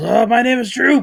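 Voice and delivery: very high, shrill goblin shout. Voicing a goblin sent flying backwards by a blast: goblin yelling. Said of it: "and he yells".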